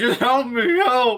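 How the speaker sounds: very high, drawn-out, desperate panicked shout. Describing an injured man running toward people: shouting. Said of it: "he's just shouting".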